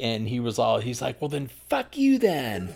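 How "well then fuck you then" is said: acted-out angry, high-pitched voice. Retelling how a friend got mad and snapped back: imitating someone angry. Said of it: "he got all mad".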